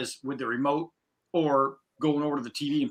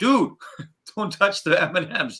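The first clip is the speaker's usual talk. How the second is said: toned-down, mild, acted-out yell; 4 semitones higher than usual. Retelling cleaning up spilled candy and yelling to him: retelling own yell. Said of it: "and I'm yelling".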